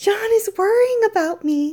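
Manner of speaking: shrill, very high, very loud, overjoyed outburst. Asked if she walked all the way here, she is crying out delightedly. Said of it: "she cried".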